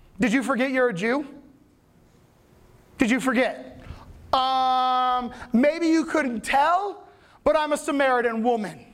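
slow, sarcastic, mocking delivery. Acting out a hurt woman answering a stranger at the well, sarcastic. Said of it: "everything is sarcastic to her".

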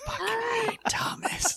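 hushed, whispered grumble under the breath. Describing someone squirming as Thomas grabs his hand, voicing him: retelling muttering under breath. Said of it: "you just can hear him under his breath like".

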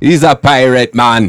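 delivery that sounds Irish. Friends trying out pirate voices, one repeating a line, sounding like an Irish accent. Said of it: "Sounds like an Irish guy saying man".

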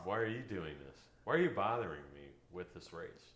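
snarling, sneering voice. Voicing a surly runner next to them during a race, sneering. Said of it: "Maybe they're even like sneering".

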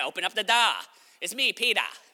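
put-on Boston accent. Retelling the story, the speaker voices Peter at the door with a Boston accent. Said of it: "And he's a Boston accent".

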